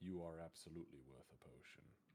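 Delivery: hushed, very soft, barely audible half-whisper. Voicing a character who tells a battered companion she's worth a potion: half-whispering. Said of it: "he whispers in Elven".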